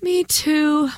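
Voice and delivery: worn-out, weary, pitched a bit high. A narrator reads a sleepy girl agreeing with another girl after waking, weary. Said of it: "Moira agreed wearily".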